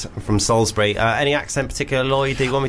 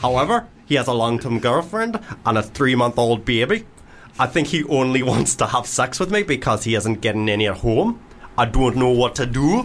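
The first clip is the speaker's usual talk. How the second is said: light touch of a Geordie accent. Reading a letter aloud, the speaker slips into a bit of a Geordie accent. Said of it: "I went a bit Geordie".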